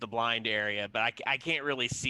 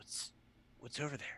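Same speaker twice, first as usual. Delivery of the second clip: whispered, barely voiced, hushed, very quiet; 3 semitones higher, 14 dB quieter than usual. Asking a companion in character what is over there: whispering. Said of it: "I kinda whisper to him".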